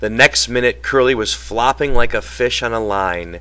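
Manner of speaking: plain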